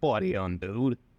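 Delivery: put-on Italian mobster accent. Two speakers redo movie lines in italian mobster accents. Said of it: "let's do it with in Italian mobster accents".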